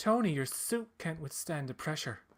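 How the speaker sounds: sassy Irish accent with attitude. Performing a quoted line, in an irish accent with sass. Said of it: "This is Irish with a bit of sass".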